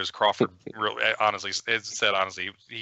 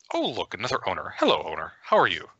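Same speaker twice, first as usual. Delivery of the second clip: prim, fussy, prissy little voice, swooping. Voicing the dagger as it greets its new owner: prissy voice. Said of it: "kind of prissy voice say".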